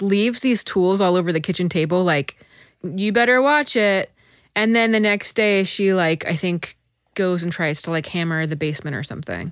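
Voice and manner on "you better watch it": ordinary talk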